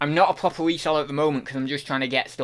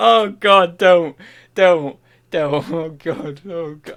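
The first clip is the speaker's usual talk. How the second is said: very loud, overwhelmed, choked up, close to tears; 3 semitones higher, 9 dB louder than usual. Speaker trying to say thank you, overcome: choking up, near tears. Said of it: "I can't say thank you because I'm gonna cry".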